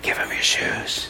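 soft, hushed whisper, barely voiced. Retelling what a little inner voice kept telling the speaker, whispering. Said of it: "this little voice whispers to me".

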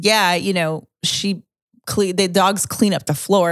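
ordinary talk

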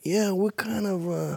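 put-on New York tough-guy talk. Mocking how two brothers act tough: Cuomo brothers New York act. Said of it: "do that New York thing where they're like".

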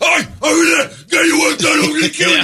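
very high, harsh, threatening yell. Imitating the backstage boss yelling at a worker: imitating Nigel yelling threats. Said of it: "He's a ball buster".

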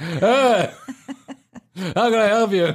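mock, very slow, spaced-out, high stoned-sounding drawl. Retelling working the counter after a rough night: imitating being high at work. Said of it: "we're still high from the Mexican weed and no-dos".

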